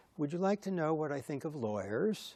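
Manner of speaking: put-on the poshest British accent possible. Retelling what Prince Philip said to Marshall after a handshake, in Prince Philip's posh British accent. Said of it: "said in the most posh British accent".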